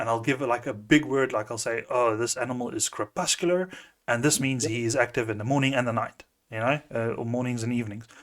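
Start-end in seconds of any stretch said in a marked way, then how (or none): none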